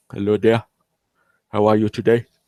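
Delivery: weak, failed put-on Indian accent. Host greeting newcomers who join, attempted Indian accent. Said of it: "trying to do my Indian type accent".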